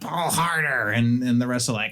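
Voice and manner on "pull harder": high-pitched goblin voice, yelling. Voicing a goblin yelling at the others to haul the sled: goblin yelling at the others. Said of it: "he's yelling at the others".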